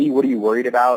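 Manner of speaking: exasperated. Retelling a reply to someone rubbing it in, retelling sounding frustrated. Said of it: "me sounding frustrated".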